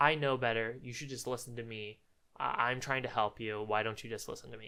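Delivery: mock, patronizing, superior, matter-of-fact tone. Describing how a man talks to people, imitating him mock-condescendingly. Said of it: "He says it kind of condescendingly".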